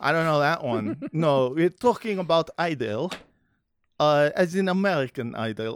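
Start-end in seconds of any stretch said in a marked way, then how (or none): 1.1-5.8 Israeli-accented speech. In a group conversation, trying to do an Israeli accent. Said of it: "I'm trying to do an Israeli accent".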